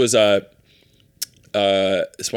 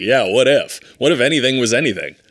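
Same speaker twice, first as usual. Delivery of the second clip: plain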